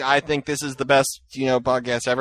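ordinary delivery

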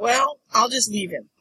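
plain

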